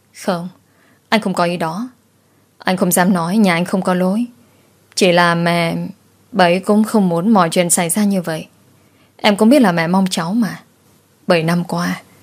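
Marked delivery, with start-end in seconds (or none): none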